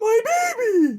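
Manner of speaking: shrill, booming, loudly belted character voice. Wrapping up today's episode with a Big Lady Walrus impression. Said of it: "I did a great impression of Big Lady Walrus saying".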